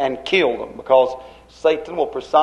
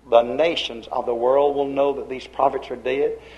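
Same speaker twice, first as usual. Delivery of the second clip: plain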